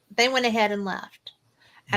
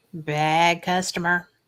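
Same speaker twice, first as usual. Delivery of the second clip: put-on slow, low, deep Southern voice; 4 semitones lower than usual. Retelling a voice heard on a recording she played, slow deep southern voice. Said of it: "it's a real slow southern deep voice".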